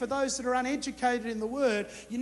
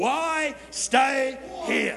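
put-on preacher's voice, full pulpit style; 4 dB louder than usual. Asking listeners to turn and preach to the person beside them; preacher voice. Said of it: "get your best preacher's voice on".

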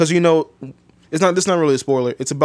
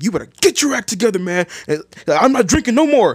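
frustrated, pitched-up, self-scolding yell; 6 semitones higher than usual. Retelling a movie scene where a character yells at himself: imitating someone yelling. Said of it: "he's literally yelling at himself".

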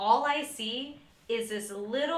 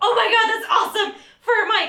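very high, loud, thrilled excited exclamation; 11 semitones higher, 12 dB louder than usual. An audio engineer retells finding a place to hide a mic: retelling own excitement. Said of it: "I was like immediately excited".

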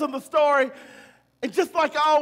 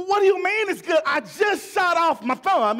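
indignant, furious, imperious outburst; 4 semitones higher than usual. Retelling a story where a king shot off his thumb: imitating a furious king. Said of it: "the king is furious".

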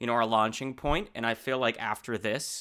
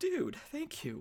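very high, soft, tearful crying voice; 8 dB quieter than usual. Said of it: "you make me cry, man".

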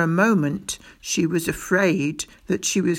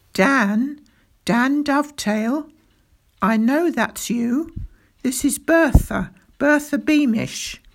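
careful, high-pitched calling out; 7 semitones higher than usual. Standing on her bed in her cell, Mrs. Beamish calls through a crack to Dan Dovetail: calling softly. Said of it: "[name] and [name] stared at the plump little woman. / [name] and [name] stared at the plump little woman. Never had they placed anyone in the dungeons who looked so proud and unconcerned at being slun".

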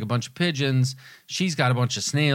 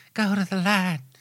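put-on whispery, airy, childlike voice, higher pitch; 7 semitones higher than usual. Quoting the medium's line from Poltergeist: Zelda Rubinstein voice. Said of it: "her voice is always very whispery and kind of airy".

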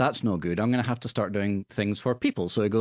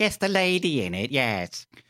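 bad put-on British accent, higher; 5 semitones higher than usual. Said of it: "that's a terrible impersonation of Daphne".

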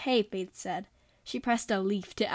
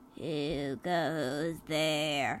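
croaky voice with a drawn-out "goes"; 6 semitones lower, 4 dB quieter than usual. A voice challenges the twins as they enter the cabin, croaky. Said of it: "Asks a croaky voice".

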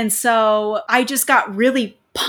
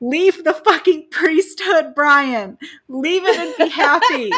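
put-on screaming, higher pitch; 5 semitones higher than usual. Retelling a reaction to a priest on TV: imitating screaming at the TV. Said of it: "screaming at my T V".

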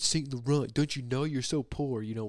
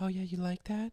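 put-on female voice, pitched high; 9 semitones higher than usual. Speaker retells answering men over a headset on camera chats: put-on female voice. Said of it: "I've got a great female voice".

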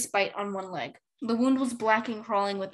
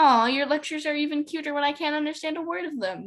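high, affectionate, cheeky, playful teasing tone; 6 semitones higher, 3 dB louder than usual. Glory answers Clay's muffled lecture; teasing. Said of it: "she teased".

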